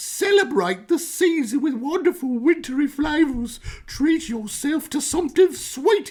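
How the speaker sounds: very high-pitched put-on British accent. Asked to read printed text aloud, reading it in a british accent. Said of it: "read this with a British accent".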